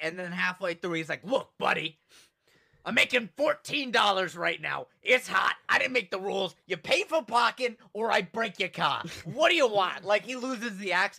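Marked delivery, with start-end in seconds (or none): 1.2-10.0 New York accent impression. Retelling a man who dropped his act halfway through; imitating a New Yorker. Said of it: "he's like a New Yorker".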